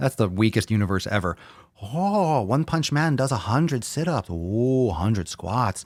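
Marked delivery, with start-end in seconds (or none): 1.8-5.8 over-the-top, exaggerated put-on Japanese accent. Mocking an anime's training regimen, the speaker puts on a really racist japanese accent. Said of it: "I'm saying it with like some really racist Japanese accent".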